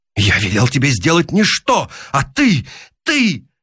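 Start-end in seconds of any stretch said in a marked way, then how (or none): none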